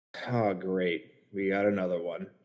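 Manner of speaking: muttering under breath. Voicing a character reacting to someone from a vault: muttering under his breath. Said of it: "sort of under his breath".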